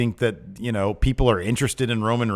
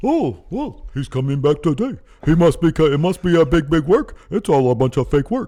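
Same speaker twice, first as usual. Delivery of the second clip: loud, high, dim-witted mocking voice; 6 semitones higher, 5 dB louder than usual. Imitating a commentator's take on a wrestler's return: mocking stupid people voice. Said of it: "That's a stupid people voice".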